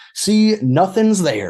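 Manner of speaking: mock smug sing-song. Retelling a manager's announcement to an empty projection area: imitating a smug announcement. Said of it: "he very smugly announced".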